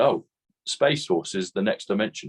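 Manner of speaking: ordinary talk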